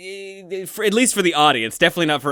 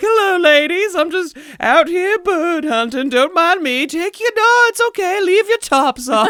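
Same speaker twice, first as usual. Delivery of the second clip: put-on old Southern belle voice, very high; 6 dB louder than usual. Describing a man disguised to blend in, doing an old Southern belle impression. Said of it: "tries to dress up as like an old Southern belle".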